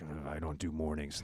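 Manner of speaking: mock very low, groggy, just-woken mumble. Speaker mimicking how kids react to mornings: imitating a groggy just-woke kid. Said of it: "like I just woke up from a".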